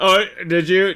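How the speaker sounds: amused, high, loud mock concern.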